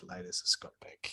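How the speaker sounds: soft, unvoiced whisper under the breath.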